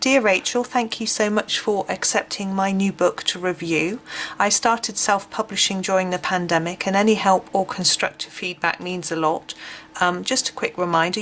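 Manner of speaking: normal talking voice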